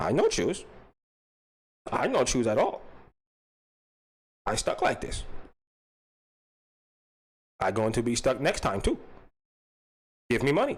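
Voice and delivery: low, sing-song put-on foreign kid voice. Answering in the requested bit: foreign little kid voice. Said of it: "but as a foreign little kid".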